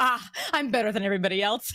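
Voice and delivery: normal talking voice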